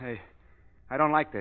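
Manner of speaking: uneasy, worked-up, agitated and nervous voice. Acting a scene where an unseen voice gives a warning, agitated and nervous. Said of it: "Calm down, [name]".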